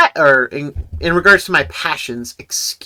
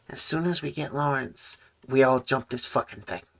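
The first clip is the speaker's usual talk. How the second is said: half-whispered as quietly as possible, barely audible; 12 dB quieter than usual. Playing a character half-whispering a plan to another character, half-whispering as quietly as possible. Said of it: "he whispers as quietly as possible".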